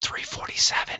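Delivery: very soft, hushed whisper. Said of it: "why are we whispering?".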